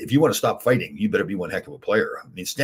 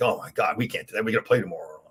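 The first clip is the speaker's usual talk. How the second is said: put-on sarcastic delivery. Retelling teammates' reaction to an extra drill: imitating a sarcastic complaint. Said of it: "I know they're being sarcastic".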